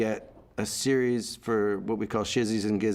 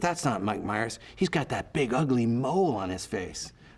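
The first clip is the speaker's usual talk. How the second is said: put-on catty mean-girl tone. Retelling what passing college girls said about a mole: imitating a mean college girl. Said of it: "She goes".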